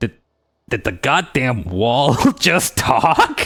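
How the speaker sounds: slow goblin creature voice. Playing a goblin who taunts someone that believes the wall spoke to them. goblin voice. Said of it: "A hoarse voice".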